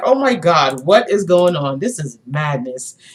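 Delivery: words broken by laughter while talking. Retelling a rich lady's reaction in a show: imitating a woman laughing while talking. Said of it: "she was having dinner and she was laughing".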